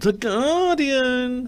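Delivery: comic, silly put-on voice pitched very high. Starting a newspaper review with The Guardian, announcing it in a put-on voice. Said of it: "I haven't done that voice for a while".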